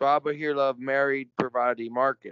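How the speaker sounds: ordinary delivery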